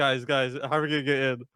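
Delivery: play-acted panicked, anxious, urgent pleading. Retelling being stuck outside with a missing ticket: retelling own panicked words. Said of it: "And I'm, like, panicking".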